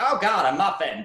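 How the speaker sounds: high, shrill, big gush. Describing how the character reacts on seeing a muffin, the actor uses a shrill Nathan Lane voice. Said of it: "the more shrill part".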